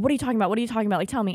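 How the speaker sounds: acted, freaked-out, panicked, fast rattled-off speech. Retelling own reaction on a phone call: retelling own panicked words.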